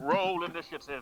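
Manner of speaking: booming voice from above. Describing a voice echoing from the heavens, in a booming voice from the heavens. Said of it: "A booming voice echoes from the heavens".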